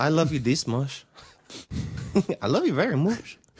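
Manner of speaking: put-on non-native accent with broken English phrasing. Retelling what some people said to them, in a broken English accent. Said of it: "They had broken accents".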